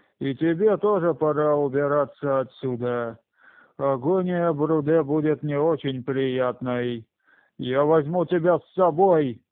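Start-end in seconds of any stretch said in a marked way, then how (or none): none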